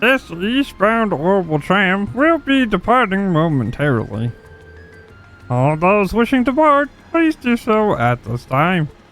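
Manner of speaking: silly put-on frog puppet voice. Voicing a tram announcement in a made-up silly voice: silly voice, like a bad Kermit impression. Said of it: "I was just doing a silly voice".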